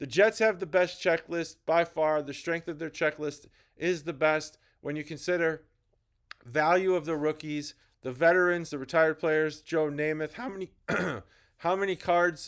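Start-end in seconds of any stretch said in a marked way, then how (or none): 10.3-12.5 little crack in the voice on how. Comparing football card checklists, speaker asks a question: voice cracking. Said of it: "sorry for the little voice crack there".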